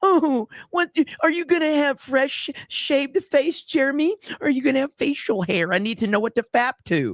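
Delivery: very high, mocking teen-girl voice. Mocking a commenter's question about his beard, imitating Nick Nero as a high school girl. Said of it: "You sound like a fucking high school girl".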